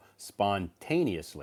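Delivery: "spontaneously" with second syllable -ta- stressed. Confirming a learner's pronunciation of a word: stress second syllable of spontaneously. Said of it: "the emphasis is on the second syllable".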